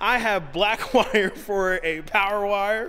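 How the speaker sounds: words breaking with laughter. Explaining a wiring build to the audience, laughing while speaking. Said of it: "I can't even say it without laughing".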